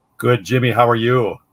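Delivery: loud on-air radio announcer voice. Answering a greeting from the other speaker, radio voice. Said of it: "you got that radio voice".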